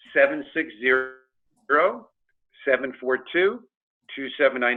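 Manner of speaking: very slow, deliberate, spaced-out reading. Speaker gives their callback phone number, spoken slowly. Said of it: "I'll say this slowly".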